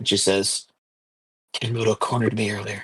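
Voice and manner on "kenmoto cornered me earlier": low, hushed whisper, quieter. Voicing a character who confides her fear: low whisper. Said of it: "her voice drops to a low whisper".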